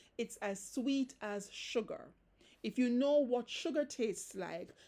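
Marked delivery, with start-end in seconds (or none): none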